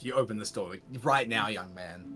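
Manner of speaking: mock firm, commanding tone. Voicing a character ordering someone to open the door: assertive tone. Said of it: "an assertive tone".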